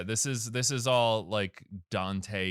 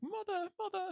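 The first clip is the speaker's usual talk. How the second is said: put-on very high, soft little girl voice, light British accent; 7 dB quieter than usual. Describing the little girl who follows Bayonetta around, little girl with slight British accent. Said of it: "She has a little British accent".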